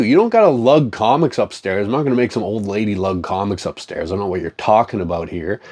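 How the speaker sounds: usual speaking voice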